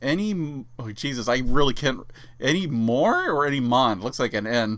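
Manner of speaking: ordinary talk, nothing marked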